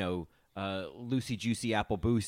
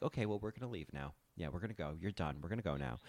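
very quiet, hushed, calm, totally unflustered; 3 semitones lower, 10 dB quieter than usual. Imitating Phaedra calmly leaving in the middle of a fight: imitating Phaedra, calm and quiet. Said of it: "she is so calm through it all".

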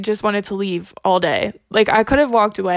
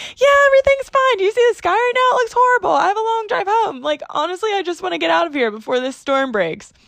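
very high voice, pitched way up; 10 semitones higher than usual. Retelling answering a kid's call on Bluetooth, imitating own high-pitched voice. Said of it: "My voice went up 10 octaves".

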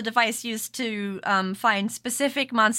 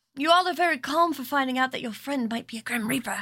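whispering in a character voice; 3 semitones higher than usual. Voicing a character who leans in toward the party: whispering in character. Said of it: "leans in a little bit and whispers that".

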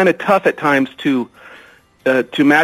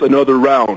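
gruff, put-on boxer voice; 2 semitones lower than usual. Suggesting a book sequel title, saying it in a Rocky voice. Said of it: "in a Rocky voice".

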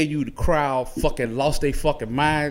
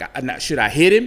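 ordinary talk

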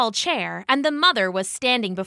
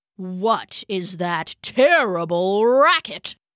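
low growling tiger voice; 3 semitones lower than usual. A narrator reads a tiger reacting to a loud shriek, growling tiger. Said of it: "the tiger growled to himself".

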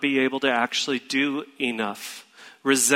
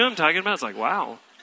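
normal talking voice

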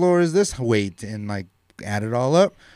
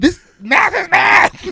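acted-out, furious, very loud, very high, rough-edged yell; 10 dB louder than usual. Retelling a movie scene where the dad helps with math homework: imitating the angry dad from The Incredibles 2. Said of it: "so pissed, hitting his book".

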